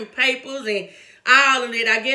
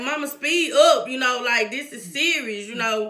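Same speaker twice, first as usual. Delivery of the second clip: usual speaking voice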